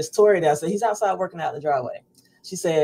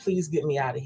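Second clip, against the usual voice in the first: put-on tearful crying voice, quieter; 6 dB quieter than usual. Retelling what Dad said on the phone from hospital: imitating someone crying. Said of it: "and he's crying, and he's like".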